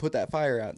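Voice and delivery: put-on urgent, lightly yelled, mild shout. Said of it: "they're screaming at Steven".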